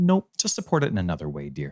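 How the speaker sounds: deadpan, bone-dry delivery. Retelling what she answered without looking up from her book, quoting a deadpan reply. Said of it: "and just very deadpan".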